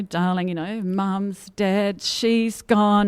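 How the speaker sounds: put-on, very slow, high, stretched-out yell. Retelling a late-night phone call from dad: imitating dad yelling. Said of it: "he just started yelling down the phone at me".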